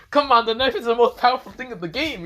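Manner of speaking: mock very high, loud, protesting complaining tone. Retelling Issei's protest about the knife: imitating someone complaining.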